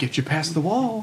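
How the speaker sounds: mock patronizing, condescending, talking-down delivery. Asked whether a game character sounds condescending, the speaker imitates him: mock-condescending. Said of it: "condescending as shit".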